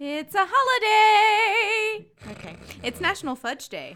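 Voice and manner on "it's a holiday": very loud, high talk-show shout, "holiday" stretched out. Announcing National Fudge Day in an Oprah impression. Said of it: "Was that an Oprah impression?".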